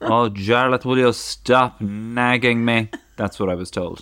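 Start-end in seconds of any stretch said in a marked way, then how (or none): 0.0-2.9 loud, drawn-out, nagging scolding tone. Retelling what his mother told him as a child: imitating his mother nagging. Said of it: "that's how my mother sounds".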